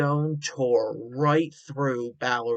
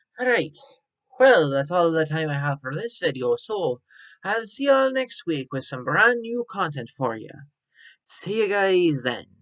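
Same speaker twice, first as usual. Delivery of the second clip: put-on Irish accent, louder; 5 semitones higher, 4 dB louder than usual. Signing off a video to viewers, Irish accent. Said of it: "(Irish Accent)".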